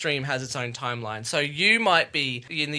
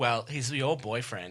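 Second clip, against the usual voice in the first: quiet, very sarcastic tone; 2 semitones lower, 5 dB quieter than usual. Retelling a line while discussing an episode, mock-sarcastic. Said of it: "he sounds like he's very sarcastic".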